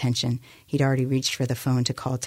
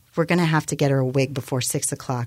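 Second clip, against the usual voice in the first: ordinary delivery, nothing marked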